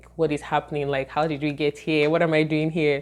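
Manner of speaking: plain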